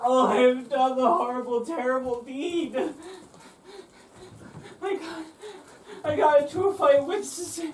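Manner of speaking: tearful, blubbering, whimpering sobbing. A blubbering man answering the party's question: crying and whimpering. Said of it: "why are you crying, whimpering, and blubbering?".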